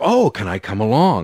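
bright, eager, very peppy and perky tone. Retelling a cousin asking to come along to see a band: imitating a peppy voice. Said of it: "said in this very sort of peppy".

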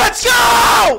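very high, loud, big hype shout.

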